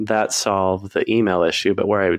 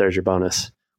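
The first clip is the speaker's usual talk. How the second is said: imitated muttering under breath. Retelling how a boss dropped cash and walked out: imitating a mumble under the breath. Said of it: "mumbled under his breath".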